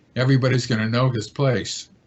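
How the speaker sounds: usual speaking voice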